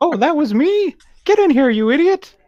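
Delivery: very high, shrill, loud, little squeaky scolding voice. Narrating a game scene, voicing the voice from the gate: little squeaky voice. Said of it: "That little squeaky voice".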